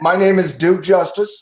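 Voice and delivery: high, loud, pompous duke-like nobleman voice.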